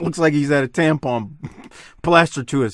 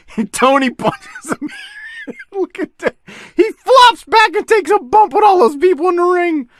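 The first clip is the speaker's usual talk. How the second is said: very high, swooping speech through laughter; 4 dB louder than usual. Commenting on a wrestler flopping in a match, laughing while talking. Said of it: "I just had to laugh".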